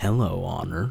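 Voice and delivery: very low, smooth, lightly gravelled voice. Voicing a character who greets Honor: Professor Venomous voice. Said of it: "What was the voice I was doing for this guy?".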